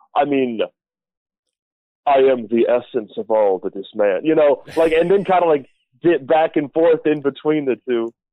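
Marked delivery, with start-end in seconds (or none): 2.0-4.2 sultry model voice, lower pitch. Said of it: "all seductive, like this".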